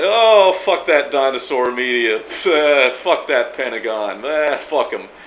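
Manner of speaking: laughing, mocking, snarky smart-ass sneer. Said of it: "laughing like a snarky coffee shop smart ass".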